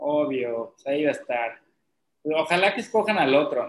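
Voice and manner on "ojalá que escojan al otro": ironic, sarcastic delivery meaning the opposite. Talking about a candidate campaigning alongside his daughter, sarcastic. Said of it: "esto es sarcasmo".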